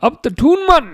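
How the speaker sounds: put-on Geordie accent. Reacting to a chat message during a football stream: geordie accent. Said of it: "my Geordie accent's better than my Ange accent".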